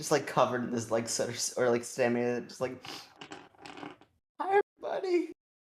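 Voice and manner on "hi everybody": heavy, hard panting at very high pitch. Voicing a character standing in ash, greeting everybody: panting heavily. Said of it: "is panting heavily".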